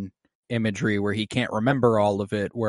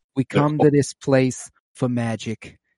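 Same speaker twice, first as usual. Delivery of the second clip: put-on thick, heavy Boston accent, slow and drawn out; 3 semitones higher than usual. Quoting the AMC theater opening ad: Nicole Kidman impression, thick Boston accent. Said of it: "the Boston accent that's, like, really thick".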